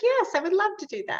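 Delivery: tiny, sugary, sweet little voice, very high. Retelling how a guest put on the spot agreed, imitating her sweet little voice. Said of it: "in her sweet little voice".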